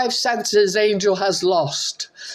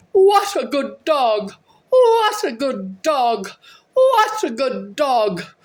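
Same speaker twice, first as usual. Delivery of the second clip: put-on yelling, higher pitch. Retelling calling for a runaway dog in the yard, retelling a yell. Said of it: "I yelled".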